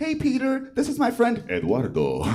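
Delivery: animated, high, swooping sing-song voice. Speaker retelling how a friend introduced someone, imitating her high-pitched voice. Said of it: "she has like a high-pitched voice".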